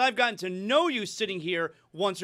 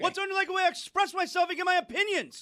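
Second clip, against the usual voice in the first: loud, very high, over-the-top complaining tone; 10 semitones higher than usual. Answering a criticism that he is too loud: speaking loudly. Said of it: "you could have said that a little softer".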